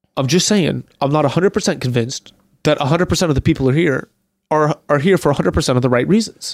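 put-on serious tone. Retelling what Carl said, imitating his serious tone. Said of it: "And Carl's just so serious".

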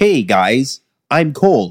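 imitated American accent. Discussing which accents people can do, demonstrating an American accent. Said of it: "why can I go like".

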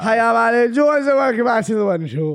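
put-on drunk-sounding, tipsy presenter voice. Imitating a presenter opening her show, Alan Jones mock-drunk speech. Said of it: "She speaks like she's pissed".

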